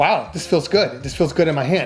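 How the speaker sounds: ordinary talk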